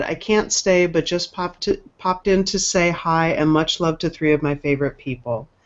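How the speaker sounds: ordinary talk, nothing marked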